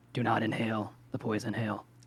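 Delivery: low mumble under the breath. Voicing a character walking past another character: muttering. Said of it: "Tizkar just mutters".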